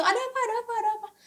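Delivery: hurried, high-pitched alarm.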